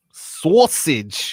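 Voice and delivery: sausage said loudly in a New York accent. Showing how New Yorkers say the pizza topping, New York accent on sausage. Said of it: "if you're from New York. That's how you say it".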